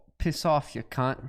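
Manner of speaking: attempted put-on Australian accent. Asked by the group for their best Australian accent, taking a turn in a put-on Australian accent. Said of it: "Let's hear everyone's best Australian accent".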